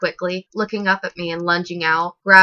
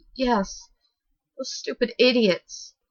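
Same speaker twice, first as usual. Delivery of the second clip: soft, slow mumbling on the edge of tears; 5 semitones higher, 5 dB quieter than usual. Reading a story aloud, a doll character blaming others: mumbling, starting to cry. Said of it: "she mumbled, starting to cry".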